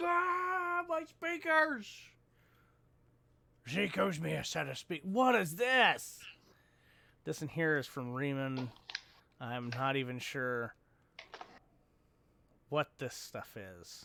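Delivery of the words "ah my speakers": high-pitched mock cry of pain. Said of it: "Everybody had been like".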